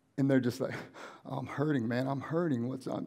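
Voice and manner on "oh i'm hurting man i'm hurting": put-on pained, hurting voice, slower. Retelling what they said on a visit to the desert, imitating someone hurting. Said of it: "You hear it in my voice, like how bad I'm hurting".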